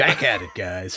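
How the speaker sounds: put-on sports radio host voice, slow and smug. Opening the episode as a put-on douchey sports talk radio host. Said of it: "in this voice with this kind of energy".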